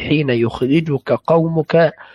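normal talking voice

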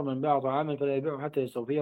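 ordinary talk

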